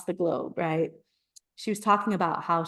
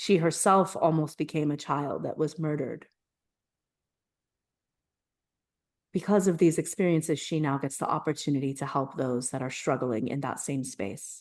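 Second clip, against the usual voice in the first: moved, emotional voice with emotion rising; 2 semitones lower than usual. Telling how a woman now helps others who are struggling, getting emotional. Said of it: "sorry, I'm getting emotional".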